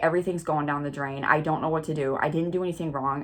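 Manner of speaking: put-on panicked voice. Retelling own words after losing job and burning hair: imitating own past panic. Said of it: "I'm having, like, a panic attack".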